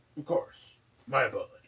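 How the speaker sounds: put-on hiccuping voice. Voicing Trovis after a player passes a deception check: Trovis voice, hiccuping. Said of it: "he hiccups and he's like".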